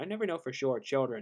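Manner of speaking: ordinary delivery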